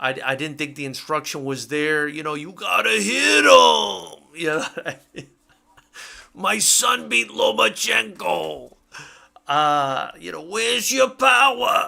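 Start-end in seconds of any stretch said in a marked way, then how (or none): 2.3-11.9 raspy voice, high-pitched and slow. Criticising the between-rounds instruction, the speaker does a raspy Lopez Senior voice. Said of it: "trying to do the raspy uh, Lopez Senior voice".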